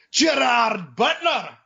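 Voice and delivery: high, shouted, very bad put-on Scottish accent. Retelling yelling during a movie trailer: imitating yelling in a bad Scottish accent. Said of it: "I just yell".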